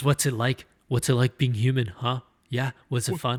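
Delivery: put-on frustrated voice. Retelling a TV scene where Wesley gets frustrated: frustrated Wesley impression. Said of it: "He just gets so frustrated".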